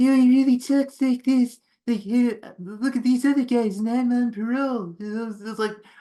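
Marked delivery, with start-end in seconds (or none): 0.0-4.9 squeezed, strained, pinched voice, as if clamped. Imitating a movie character's annoying voice: imitating a strained, clamped voice. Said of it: "it's like his nuts are in a clamp".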